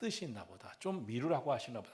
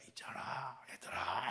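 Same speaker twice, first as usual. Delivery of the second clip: imitated lowered voice; 3 semitones lower, 5 dB quieter than usual. Recalling kindergarten days, imitating the praying mothers: imitating praying mothers' lowered voice. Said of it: "이렇게 목소리 이렇게 깔아요".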